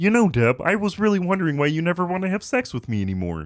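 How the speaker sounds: puppet-like nasal voice. Imagining Kermit the Frog in Everybody Loves Raymond, talking to Deb: Kermit the Frog voice. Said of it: "Everybody Loves Raymond with Kermit the Frog".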